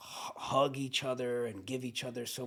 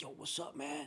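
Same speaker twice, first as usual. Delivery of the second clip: swaggering delivery full of bravado; 3 semitones higher, 8 dB quieter than usual. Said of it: "he comes over with all this bravado".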